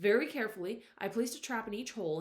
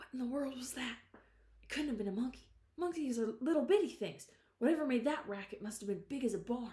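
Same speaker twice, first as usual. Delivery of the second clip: quavering, trembling whisper, higher and faster; 3 semitones higher than usual. The narrator whispers to Rowdy about the racket, in a quavering whisper. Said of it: "In a quavering voice, I whispered".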